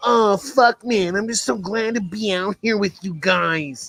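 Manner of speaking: mocking coach voice, "guys" drawn out. Imitating a coach running with his player: mocking impression of a coach. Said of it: "that far off my impersonation".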